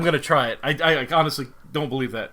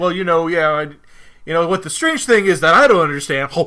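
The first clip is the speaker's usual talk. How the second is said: put-on talking with full mouth; 4 semitones higher, 9 dB louder than usual. Describing a scene where Columbo eats and talks at once, imitating Columbo talking with mouth full. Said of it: "He's shoving food in. He's talking like".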